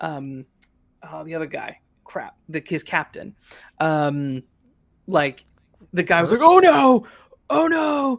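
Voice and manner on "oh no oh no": very loud, very high, stretched-out shriek. Retelling an audience member at a movie: imitating someone screaming.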